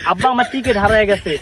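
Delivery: ordinary talk, nothing marked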